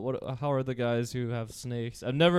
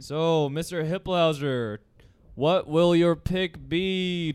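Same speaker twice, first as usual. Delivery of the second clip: mock game show announcer voice, higher; 4 semitones higher, 3 dB louder than usual. Picturing the show's announcer asking a contestant: imitating a game show announcer. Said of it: "the announcer going, like".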